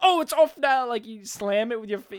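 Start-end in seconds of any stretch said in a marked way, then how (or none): 0.0-0.9 very loud, high, staged, put-on dramatic delivery. Acting out hanging up a touchscreen phone: mock dramatic line. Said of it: "you can't just dramatically go".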